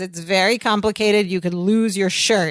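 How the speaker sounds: normal talking voice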